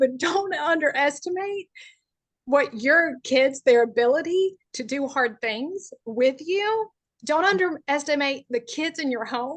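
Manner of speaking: choking up, voice close to tears. Speaking to parents about their kids: choking up. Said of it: "that'll make me cry. Sorry".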